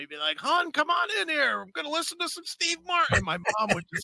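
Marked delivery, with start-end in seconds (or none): 0.4-3.2 put-on shrill, very high, called-out yell. Retelling how dad called mom into the room: imitating dad yelling. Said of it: "he'd yell into my mom".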